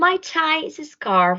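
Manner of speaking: ordinary delivery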